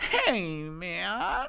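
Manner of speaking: mock California surfer dude voice. Joking with the other speaker about deaths: California surfer voice. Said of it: "the California surfer, right? Who was like".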